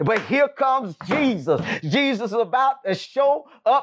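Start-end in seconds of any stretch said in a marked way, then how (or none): none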